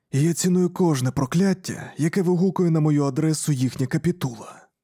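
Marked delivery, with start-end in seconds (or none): none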